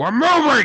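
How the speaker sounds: yelling in a character voice. Playing a character calling a companion to leave: yelling as Knox. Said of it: "he just sort of yells".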